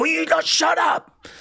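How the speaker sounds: play-acted, harsh, raw, very high-pitched shout. Describing wanting to shout at a woman with a flat tone, mock shout. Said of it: "I wanted to shout".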